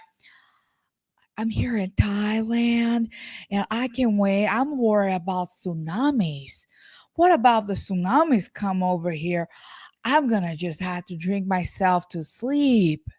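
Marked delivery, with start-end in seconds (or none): 1.4-13.0 spaced-out wealthy woman voice. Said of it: "She's more like".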